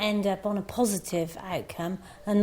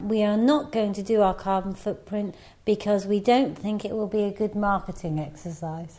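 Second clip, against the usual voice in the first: ordinary delivery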